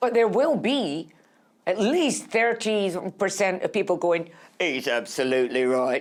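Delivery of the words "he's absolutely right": low, put-on Cockney accent. The speaker voices an imagined audience member, cockney accent. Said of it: "I don't know why I've made that person Cockney".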